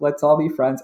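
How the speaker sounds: plain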